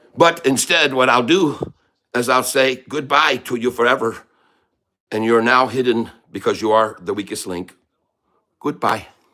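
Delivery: loud put-on Irish accent throughout. Playing a leprechaun, speaking in a fake irish accent. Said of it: "what you think about me Irish accent".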